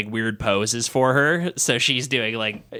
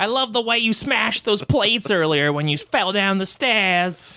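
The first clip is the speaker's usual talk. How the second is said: very high-pitched comic comedian voice; 9 semitones higher than usual. Playing Shirley MacLaine in a comedy bit: Jerry Lewis voice. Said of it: "I did Shirley MacLaine with a Jerry Lewis voice".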